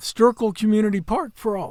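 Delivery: voice cracking. Podcast host moving on to the next news story, voice cracking. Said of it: "My voice just cracked".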